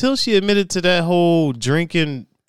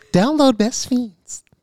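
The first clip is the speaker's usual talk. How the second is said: sugary, sweet, high-pitched advert voice; 8 semitones higher than usual. Asked by Steph what her ad voice is, doing it: Steph's sweet ad voice. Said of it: "It's so sweet".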